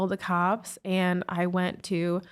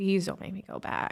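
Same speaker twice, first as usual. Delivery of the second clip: hushed, pleading, begging whisper; 4 dB quieter than usual. Retelling a plea not to be sent back home: imitating own past begging. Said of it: "I remember begging her".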